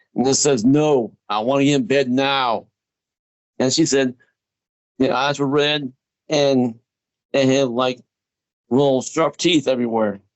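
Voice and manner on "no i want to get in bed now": put-on deep scary voice, slower. Retelling what the thing said after being told to go back to bed: put-on deep scary voice. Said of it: "Real deep, real scary".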